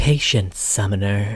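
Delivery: purring, purr-like voice. Quoting a game character's line in a purring voice. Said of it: "It's like a purr".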